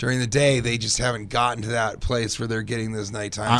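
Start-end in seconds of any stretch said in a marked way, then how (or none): none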